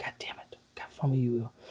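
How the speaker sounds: soft, frustrated whispering.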